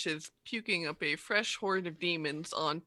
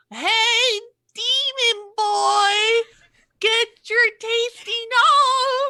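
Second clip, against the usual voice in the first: put-on shrill, drawn-out old-woman voice; 12 dB louder than usual. Narrator voices Lulu calling out to the demon boy: Lulu voice.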